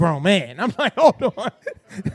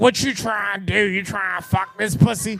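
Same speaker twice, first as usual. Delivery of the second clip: imitated woman's voice, like a cigar smoker; 6 semitones lower than usual. Retelling what Sheikah says over the phone, imitating Sheikah's smoker voice. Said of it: "Sheikah got that like cancer cigar smoker's voice".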